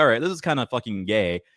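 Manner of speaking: ordinary talk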